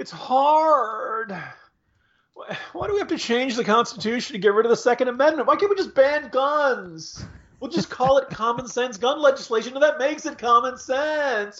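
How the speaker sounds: play-acted, very high, whiny, whining voice. Speaker mocks progressives by voicing their view in a put-on whiny voice. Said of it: "pardon my whiny voice".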